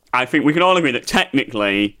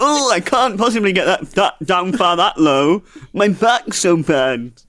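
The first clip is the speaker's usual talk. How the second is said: higher, teasing, mocking put-on voice; 7 semitones higher than usual. Doing an impression of the person you're talking with, a mocking impression of them. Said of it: "Is that your impression of me?".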